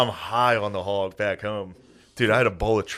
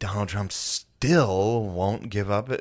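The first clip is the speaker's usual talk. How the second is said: slow, curt, snippy radio newsreader delivery with attitude. Retelling how the NPR lady reported on Trump, mock-snippy NPR lady impression. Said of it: "snippy out of the NPR lady".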